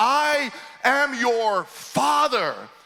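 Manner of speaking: yelling, every word stretched out, pitched very high. Retelling a father chasing him around a table: imitating a father yelling. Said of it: "he's yelling at the top of his lungs".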